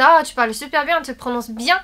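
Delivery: plain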